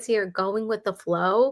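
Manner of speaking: ordinary delivery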